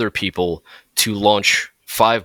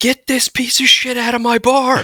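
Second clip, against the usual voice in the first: shrill, very high, piercing shout. Retelling a story of a woman shouting in her bar, imitating her shouting. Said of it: "she's shouting".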